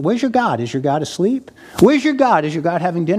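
put-on, mocking, taunting prophet voice. Retelling how Elijah taunted the prophets of Baal: imitating Elijah mocking. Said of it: "And he mocks them".

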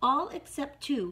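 plain

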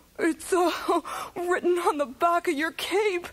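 giggling through the words. Cookie answers the magician's question, laughing. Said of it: "Cookie laughed".

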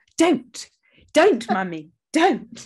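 put-on very slow, high, loud, drawn-out teasing toddler voice. Retelling how a toddler says don't back to the parent: imitating a mocking toddler. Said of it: "as if he's just mocking me".

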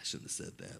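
soft, unvoiced whisper, sounding regretful.

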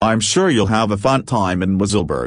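plain reading voice

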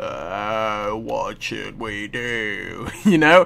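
very slow, rough, low just-woke-up voice. Describing how they sounded hours ago, the speaker imitates a rough morning voice. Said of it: "I still had my morning voice on and it sounded like this".

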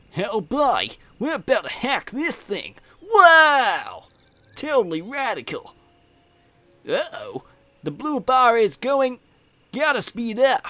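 loud, very high, swooping cartoon voice, wow stretched out. Mixing things up during a game, the speaker switches to a Sonic impression. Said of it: "I'll go with a Sonic impression".

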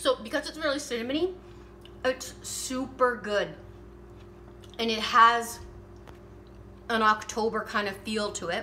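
talking while eating, mouth full. Taste-testing a cinnamon treat on camera, talking with mouth full. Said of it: "I'm eating with my mouth full".

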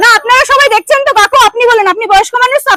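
loud, high-pitched, angry shouting.

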